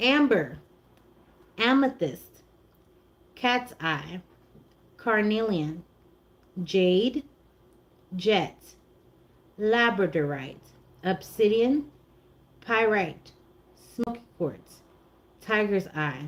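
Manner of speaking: slowed down. Starting the crystal list over after being told it was too fast: slowed down. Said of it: "Slow down and start over".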